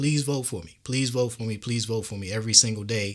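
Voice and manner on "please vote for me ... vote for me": mock begging, pleading tone. Retelling how chefs online ask for votes: imitating chefs begging. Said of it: "just straight up begging".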